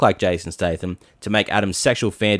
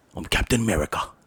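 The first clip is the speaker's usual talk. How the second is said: put-on British accent, quieter; 5 dB quieter than usual. Imagining a movie recast, doing Captain America with a British accent: Jason Statham as Captain America. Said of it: "With the British accent still".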